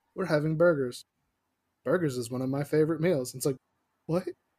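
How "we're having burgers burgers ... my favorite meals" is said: bone-dry, flat monotone with zero inflection. Imitating how another girl talked, imitating a flat, uninflected delivery. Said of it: "there's no inflection. It's just the driest".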